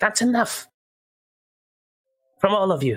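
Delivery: very light-toned, very high-pitched voice. A storyteller voices someone speaking from the background of the scene, in a very light voice. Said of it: "you hear a very light voice in the background say".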